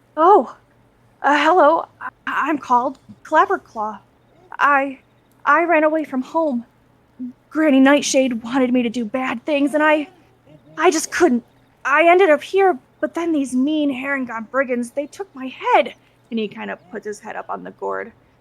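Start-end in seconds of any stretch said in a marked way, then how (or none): 0.2-16.0 small, trembling, stammering little voice. A runaway creature on a bridge answers a traveler's question, small shaky voice. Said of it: "speaks in a small, somewhat shaky voice".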